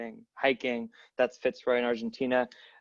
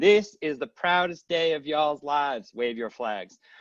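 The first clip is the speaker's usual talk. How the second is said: put-on Southern US accent; 3 semitones higher than usual. Recalling a naturalization ceremony, quoting the local person: put-on Southern accent. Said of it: "a Southern accent".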